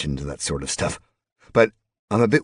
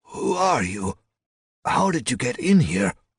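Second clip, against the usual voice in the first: very high, rough, worn voice; 10 semitones higher than usual. An old man questions the narrator who just stumbled in, rough voice like a smoker's. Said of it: "The old guy's voice was rough, like he'd been smoking".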